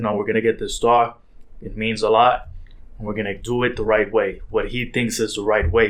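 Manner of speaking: plain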